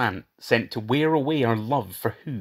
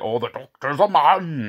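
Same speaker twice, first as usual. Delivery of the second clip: slow, genial, unhurried bellow; 2 semitones higher, 3 dB louder than usual. Retelling a scene where C greets the wrong person: imitating Stephen Fry bellowing genially. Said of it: "he bellows, like".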